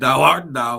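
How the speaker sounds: put-on archaic, old-fashioned Elizabethan stage player speech. Imitating own reply to a friend in mock Shakespeare style: mock Shakespearean voice. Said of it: "Fucking Shakespeare".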